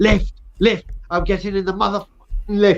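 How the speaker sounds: acted scream, played small, held back, half-voiced. Speaker retelling what he shouted while getting into a crowded lift, retelling a scream. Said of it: "I screamed at the top of my voice".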